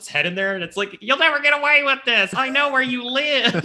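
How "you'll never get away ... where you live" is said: put-on high talking baby-doll voice. Retelling a kids' movie scene, speaking the baby doll's line in a doll voice. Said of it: "voice for the doll".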